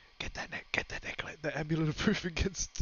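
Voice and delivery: very quiet, hushed, breathy, barely audible whisper. Whispering from Satana's house while adding a necklace to an order, whispering. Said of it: "I'm I'm whispering from from from fucking Satana's house".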